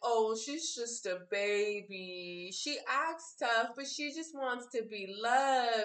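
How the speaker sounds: play-acted, very slow, drawn-out teasing sarcasm. Recalling getting emotional, the speaker imitates someone teasing her: mock sarcastic teasing. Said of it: "trying to joke and, like, be sarcastic".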